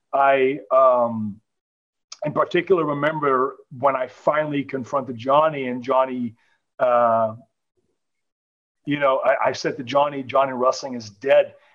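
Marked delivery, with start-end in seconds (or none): none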